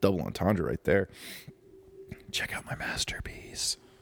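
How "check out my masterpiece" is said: soft, sweet, intimate whisper. Podcaster getting loopy, speaking into the microphone; whispering sweet nothings. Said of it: "I don't know why I'm whispering sweet nothings".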